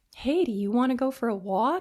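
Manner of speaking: syrupy, honeyed, sugary sweet coaxing voice. Retelling how they once asked someone along: imitating a sugary sweet voice. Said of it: "sugary, sweet kind of voice".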